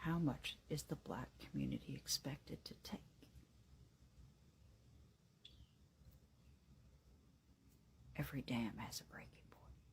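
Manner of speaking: speaking in a whisper. Speaking about names stacking up with nothing happening, whispering. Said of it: "That's because she's whispering".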